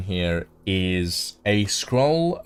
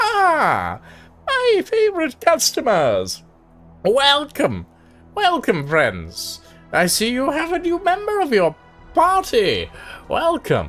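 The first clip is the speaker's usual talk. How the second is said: very high, sing-song, swooping, stretched "ah"; 4 dB louder than usual. Voicing a bird-folk shopkeeper greeting his favorite customers: eagle-like shopkeeper Ekron greeting customers. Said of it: "greets you all and greets you and goes".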